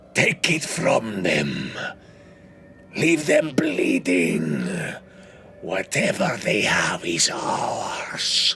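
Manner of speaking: raspy voice, calling, echoing from afar. Game master voices someone calling from the ship beyond, raspy voice from afar. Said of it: "This raspy voice echoes out from the ship beyond".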